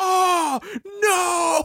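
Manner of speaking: super loud, very high anguished cry. Retelling a brother's reaction during a movie, imitating his super loud anguished cry. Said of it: "he's super loud over the like louder than the movie".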